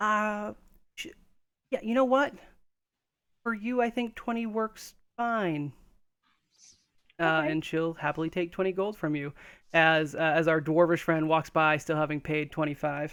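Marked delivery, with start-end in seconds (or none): 0.0-5.7 put-on high elven girl voice, flustered and taken aback. Narrating the scene, voicing the elven girl who is taken aback. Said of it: "the elven girl uh, kind of like is taken aback a bit and says".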